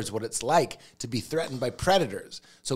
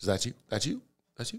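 low, quiet, soft delivery; 6 dB quieter than usual. Answering how the actor sounds in movies: imitating Denzel Washington. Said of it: "Sounds like, he's like".

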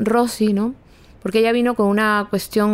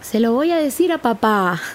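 put-on small little-girl voice with Spanish accent. Retelling when Lena came outside and caught them kissing: Lena's little Spanish-girl voice. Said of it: "así con su vocecita de niña española".

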